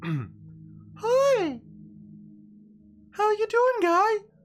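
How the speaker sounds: very high, very slow, swooping chubby mushroom voice. Voicing a little chubby mushroom greeting the players from the ship: little chubby mushroom voice. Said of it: "That's the voice".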